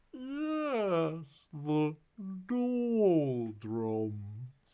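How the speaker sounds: lazy yawn with a drawn-out yes. Narrating an unseen voice answering the boy, yawning. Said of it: "yawned another voice".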